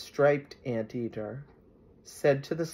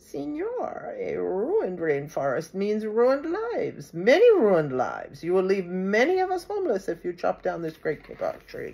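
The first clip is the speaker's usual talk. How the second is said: loud, high, squeaky little frog piping; 5 semitones higher, 5 dB louder than usual. A small tree frog speaks into the man's ear; squeaky tree frog voice. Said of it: "In a squeaky voice, he piped".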